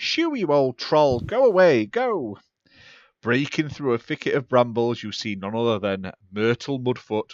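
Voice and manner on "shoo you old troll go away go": high, panicked, drawn-out shout. Narrator voicing a character driving off a troll, Myrtle Mudfoot's high panicked voice. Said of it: "a high, panicked voice call out".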